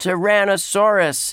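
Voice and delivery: very high-pitched hollered voice. [name] answers Tyrone the dinosaur's question to the crowd: hollered. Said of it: "[name] hollered".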